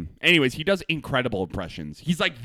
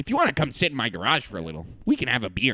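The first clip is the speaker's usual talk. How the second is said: put-on Canadian voice. Playing a neighbor who invites someone over: imitating a canadian neighbor. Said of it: "It's just a Canadian neighbor".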